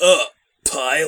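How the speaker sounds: mock contemptuous sneer. Imitating how enemies in the game say pilot: imitating disgusted enemies. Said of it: "with a mouthful of shit if they were your enemies".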